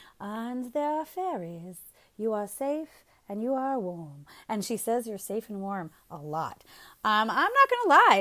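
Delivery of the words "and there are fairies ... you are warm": soft, horrible put-on British accent. Imitating the british woman from kids' sleep stories, in a horrible british accent. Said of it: "Excuse my horrible accent".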